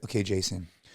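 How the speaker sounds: mock gentle, soothing, very quiet soft tone. Retelling how Andy talked him over the top while scared: imitating Andy's suddenly caring tone. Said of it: "His tone changed".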